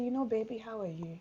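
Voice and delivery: kind, calm manner. Showing how a wife might gently raise a hurt with her husband: kind, calm manner. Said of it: "in a very kind, calm manner".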